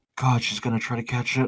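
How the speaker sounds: quiet muttering put-on voice. Narrating a game scene, voicing Madeline as others try something: Madeline muttering under breath. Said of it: "you hear her under her breath go".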